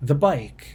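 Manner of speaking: usual speaking voice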